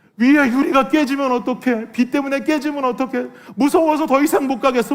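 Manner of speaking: acted frightened child voice, sobbing and wailing through words. Retelling a kindergartner's fearful words in the rainy car: imitating a crying child. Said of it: "막 우는 거예요".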